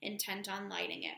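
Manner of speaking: plain reading voice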